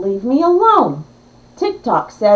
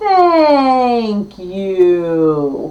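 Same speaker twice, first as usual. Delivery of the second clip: deliberate, very slow, low, stretched-out delivery; 4 semitones lower than usual. Reading a diary entry, the narrator gives Todd's reply, spoken very slowly. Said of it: "he said very slowly".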